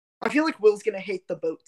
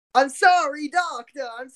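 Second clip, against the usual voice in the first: put-on Italian-sounding accent, higher and louder; 8 semitones higher, 6 dB louder than usual. Comparing how the 2019 production's Audrey says her line, Audrey with Italian-sounding accent. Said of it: "Why does she sound Italian when she says that?".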